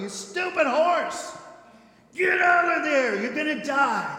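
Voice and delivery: very loud, high screaming through sobs. Telling of a man watching his horse sink, retell him screaming and crying. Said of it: "he's screaming and crying".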